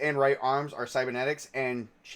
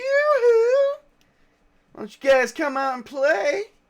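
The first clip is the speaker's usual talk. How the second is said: very high, raised, mannish female voice; 7 dB louder than usual. Game narrator voices someone calling the group out of hiding, female voice like a man. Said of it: "a female voice that sounds kind of like a man going".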